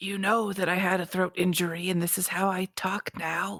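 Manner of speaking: put-on character stage whisper. [name] answers a question about his sore throat, in a stage whisper. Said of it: "[name] just kind of always st- talks in a whisper".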